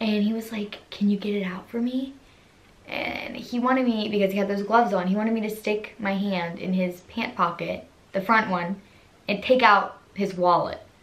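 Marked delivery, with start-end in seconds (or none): 0.9-2.1 whispered, quieter. Retelling what a costumed coworker said through his mask: imitating someone whispering. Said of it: "whispering to me through his mask".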